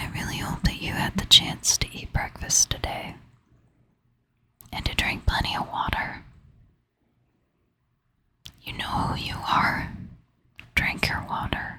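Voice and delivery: soft-spoken half-whisper. Speaker addressing a listener directly, whispering. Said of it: "my voice switches from whispering to like a soft".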